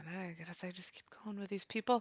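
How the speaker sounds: barely audible, very quiet whisper to herself. Voicing Quill muttering alone after companions vanished: whispering to herself. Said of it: "Quill kind of whisper to herself".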